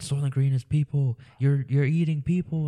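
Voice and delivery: mock screaming, high-pitched screamed cry. Retelling a movie ending where a dragged-out character screams: imitating a screaming man. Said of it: "he's screaming, like".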